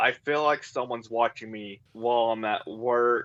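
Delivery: ordinary talk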